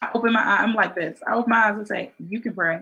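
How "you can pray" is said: sassy, attitude-filled tone. Retelling own reply when asked to pray: imitating own reply with attitude. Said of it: "with an attitude".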